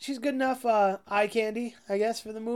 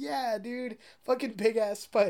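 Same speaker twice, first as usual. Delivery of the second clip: normal talking voice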